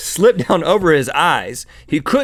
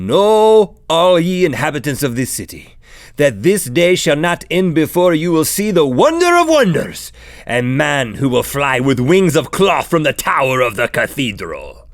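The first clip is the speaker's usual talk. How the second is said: slow put-on Spanish accent, "know" drawn out. Retelling a man in cloth wings addressing the city's inhabitants, Spanish accent. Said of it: "(Spanish accent)".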